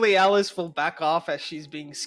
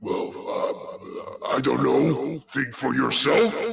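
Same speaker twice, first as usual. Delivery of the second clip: put-on tipsy, drunk-sounding character voice, lower pitched; 4 semitones lower than usual. Voicing a talking amulet that answers a player: drunk-sounding amulet voice. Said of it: "This guy sounds lit".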